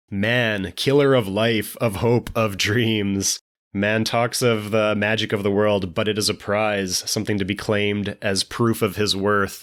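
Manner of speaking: ordinary talk, nothing marked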